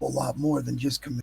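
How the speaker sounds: hushed, very quiet, low murmur. Voicing a character speaking to another across the table: low voice. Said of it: "in, like, a low voice goes".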